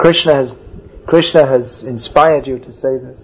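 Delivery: plain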